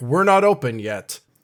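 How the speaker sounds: loud, echoing yell from far off. After a knock, a voice from the back of the restaurant yells back. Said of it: "a voice from the back of the restaurant that yells back".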